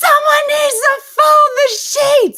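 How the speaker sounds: full-on shrill, very loud scream. Retelling screaming a demand at an older relative who tunes out: retelling a scream. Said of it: "And I screamed it at her".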